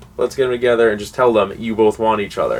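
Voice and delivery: ordinary talk, nothing marked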